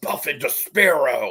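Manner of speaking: comic put-on character voice. Retelling a character's radio call to another speaker: Hulk voice. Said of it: "the Hulk voice".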